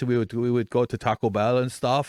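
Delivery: put-on German accent. Recalling a high school exchange student from Germany, imitating how he talked. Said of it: "he would talk like this".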